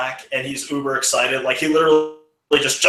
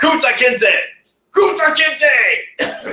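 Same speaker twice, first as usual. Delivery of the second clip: mock very slow, very high, drawn-out shout; 11 semitones higher than usual. Retelling shouting out while a friend hits with a whip: retelling a shout. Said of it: "I immediately shout".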